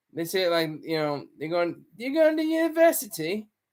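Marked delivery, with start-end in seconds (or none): 2.0-3.5 terrible put-on English accent, pitched up. Showing how English people say it, in a terrible English accent. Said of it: "that's my terrible English accent".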